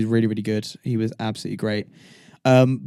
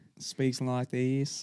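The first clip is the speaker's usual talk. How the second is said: very quiet, murmured Australian accent; 13 dB quieter than usual. Copying the other speaker's impression of a character: Dawn voice with Australian accent. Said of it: "I don't know why I'm Australian".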